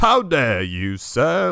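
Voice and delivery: put-on very loud, very slow, swooping, old-timey prim outrage. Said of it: "sounds like such an old-timey insult".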